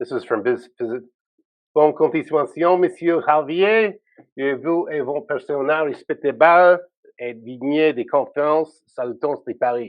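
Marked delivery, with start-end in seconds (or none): 1.7-9.9 effortful attempted French accent. Reading a French message aloud: attempted French accent. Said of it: "I'll try to sound French".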